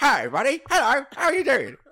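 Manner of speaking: bright, upbeat chipper voice. Speaker imitates the other speaker's brother greeting someone, imitating Isaac's chipper voice. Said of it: "It's like chipper".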